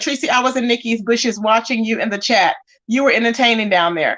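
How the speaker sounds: ordinary delivery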